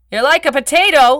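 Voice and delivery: loud, high-pitched shout. The narrator, wanting to say something romantic, calls after a departing woman, shouting. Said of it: "I shouted after her".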